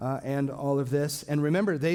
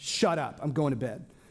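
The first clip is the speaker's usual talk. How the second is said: put-on grumpy, just-woken-up voice. Retelling being woken from a dead sleep: imitating grumpy just-woken Jesus. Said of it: "That's not how he said it".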